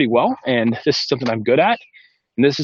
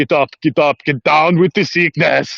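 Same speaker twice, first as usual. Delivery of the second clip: put-on Austrian accent; 4 dB louder than usual. Describing a video where Arnold Schwarzenegger cuts in, doing his Austrian accent. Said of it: "in his Austrian accent".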